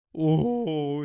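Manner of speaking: loud, drawn-out "ooh" with the voice cracking. Predicting the West Brom versus Sheffield United score, voice cracking. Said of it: "Bit of a voice crack there".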